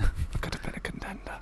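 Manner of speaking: soft, unvoiced whisper.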